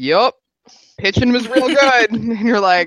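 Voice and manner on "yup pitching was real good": put-on high-pitched voice with a Texan accent. Imitating a player answering a question: Rendon impression. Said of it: "he sounds a little John Wayne-y".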